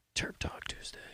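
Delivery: hushed, soft, breathy whisper. Suggesting bringing something to the next Terp Talk Tuesday, whispering. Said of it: "I don't know why I whispered that".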